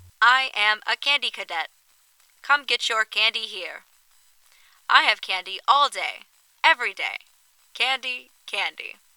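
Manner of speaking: eerie, glitchy, distorted robot machine voice. A narrator reads a faltering arcade machine repeating its line; Candy Cadet robot voice, eerily distorting. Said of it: "The robotic voice distorts eerily".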